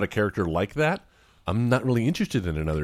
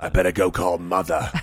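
put-on raspy showbiz voice, lower; 3 semitones lower than usual. Joking that a film character sounds like Harvey Fierstein: Harvey Fierstein voice. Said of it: "Harvey Fierstein is Dredd".

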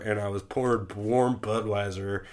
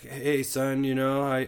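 mock drunken stutter, higher pitch; 4 semitones higher than usual. Retelling a phone call where dad had been drinking: imitating a drunken stutter. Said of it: "when he drinks, he stutters".

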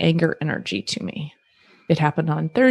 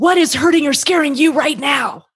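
raised voice pitched very high; 9 semitones higher, 4 dB louder than usual. Showing how to meet a partner's loud voice: raised voice. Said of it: "I raise my voice up to meet them".

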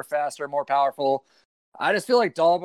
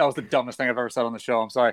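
ordinary talk

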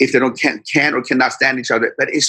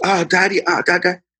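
mock-nervous voice, much higher; 6 semitones higher than usual. A father retelling his daughter caught with a full backpack, imitating her nervous. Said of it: "she gets all nervous".

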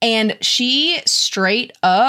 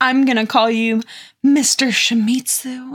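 laid-on, sultriest voice; 2 semitones higher than usual. Performing a line, then asking whether it was sultry: sultriest voice. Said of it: "in her sultriest voice. Was that sultry?".

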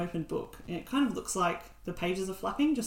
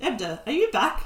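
put-on old elf voice, higher pitch; 6 semitones higher, 7 dB louder than usual. Game narrator voicing an old elf speaking down from a ladder, old elf voice. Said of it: "an old elf starts speaking to you".

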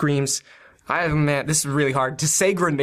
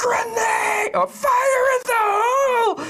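very high, drawn-out, panicked bloody-murder scream. Describing a character throwing a grenade between two guards, screaming bloody murder. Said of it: "screaming with bloody murder".

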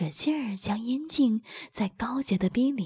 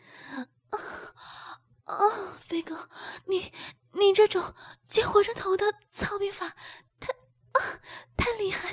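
panting, out of breath, much higher; 9 semitones higher than usual. A woman cries out to her partner during sex, panting. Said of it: "高芳气喘道".

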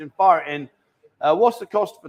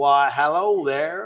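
put-on American accent, done for show. Trying out several accents, a greeting in put-on American accent.

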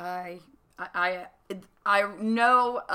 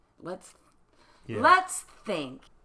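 cartoon kid voice in preschool cartoon style. Mocking a message aimed at Christians, Dora the Explorer voice. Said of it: "My best Dora the Explorer voice".

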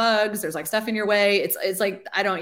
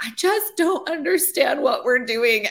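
play-acted, high, tearful words through crying; 7 semitones higher, 3 dB louder than usual. Retelling a tearful phone call from a launch team member: imitating someone crying. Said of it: "she's, like, crying on the phone".

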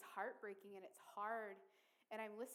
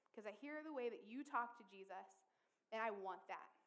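plain

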